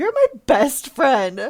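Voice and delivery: put-on drunken yell. Retelling a drunk car ride home: imitating a drunk friend yelling. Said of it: "you were just yelling".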